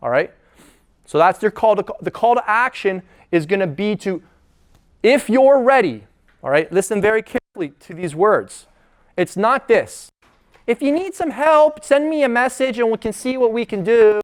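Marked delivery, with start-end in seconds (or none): 10.7-14.2 voice climbing way up, really high-pitched. Coach showing the wrong way to phrase a call to action, voice going really high. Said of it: "while your voice is going really high like that".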